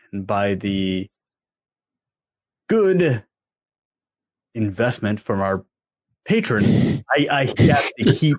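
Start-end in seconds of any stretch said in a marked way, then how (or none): 0.1-7.0 speech broken by halting, dramatic pauses. Podcast host thanks a patron while doing a William Shatner impression. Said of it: "doing your best William Shatner impression".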